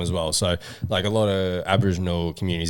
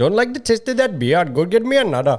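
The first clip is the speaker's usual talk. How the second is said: very high-pitched put-on Indian accent; 11 semitones higher, 4 dB louder than usual. A second try at a practice line, in an Indian accent. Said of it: "you did way better than me".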